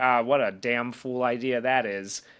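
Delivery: snarky, sarcastic, tossed-off tone. Retelling what Davey said about the contest: imitating a snarky remark. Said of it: "Davey snarks off in the background".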